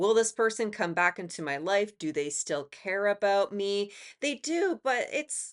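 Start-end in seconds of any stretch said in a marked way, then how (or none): 4.2-5.5 voice cracking mid-phrase, high and slow. Giving a reading to listeners, answering their question: voice cracking. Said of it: "my voice just cracked".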